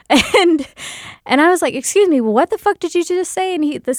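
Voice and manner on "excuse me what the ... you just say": mock-angry, much higher pitch. Speaker retells confronting a guy who laughed, retelling an angry confrontation. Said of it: "because I am pissed".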